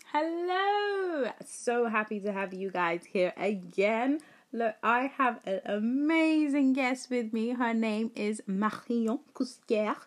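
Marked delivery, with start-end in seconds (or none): 7.5-10.0 atrocious, clumsy put-on French accent. Introducing a guest to viewers, the host gives her name in an atrocious french accent. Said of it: "my atrocious attempt at a French accent".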